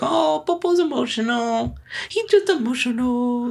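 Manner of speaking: put-on lighthearted teasing, very high and slow. Retelling how they used to joke about the dog: imitating mocking the dog. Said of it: "we'd make fun of him".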